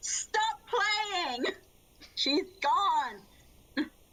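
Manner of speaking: high-pitched, full-lunged yelling at the top of lungs. Narrating a scene, a character turns to Boots, shouting at the top of their lungs. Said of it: "completely just shouts at the top of his lungs".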